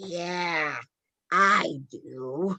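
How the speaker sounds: creepy, scary, raspy voice. Retelling a creepy exchange, imitating Janet's scary raspy voice. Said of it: "in her fucking scary ass raspy voice goes".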